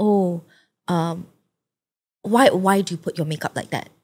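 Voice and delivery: play-acted snide, catty, backhanded sniping tone. Retelling what a school friend used to say: imitating a snide remark. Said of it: "she would make really, like, snide comments".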